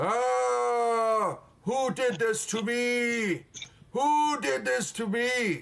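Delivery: shrill, pained, very high screaming with drawn-out ah. Game master voicing a character walking around the room, screaming and yelling. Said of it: "So he just screaming".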